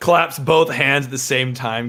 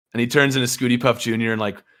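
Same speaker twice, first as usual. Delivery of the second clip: usual speaking voice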